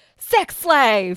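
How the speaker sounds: very loud, sudden, blurted shout at full volume. Retelling how Rod yells out on finding Chris missing: imitating Rod yelling. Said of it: "he just yells out".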